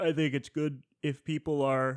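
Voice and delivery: high, loud words stretched out by a yawn. Mid-sentence, the speaker breaks off: yawning mid-sentence. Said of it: "Sorry, I'm yawning".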